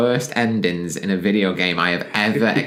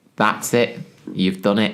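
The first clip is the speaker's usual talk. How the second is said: ordinary talk, nothing marked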